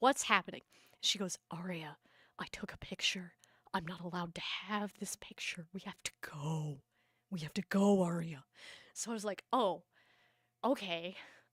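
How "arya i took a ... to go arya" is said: put-on scared, urgent voice, lower pitch. Retelling her mom urging her to leave, imitating a scared, urgent voice. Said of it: "Why do you sound scared?".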